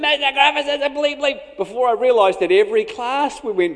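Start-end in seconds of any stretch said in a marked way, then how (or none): 0.0-1.6 put-on high, taunting, defiant childlike yell. Retelling chasing him past the classrooms, imitating him yelling. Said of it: "with him yelling repeatedly".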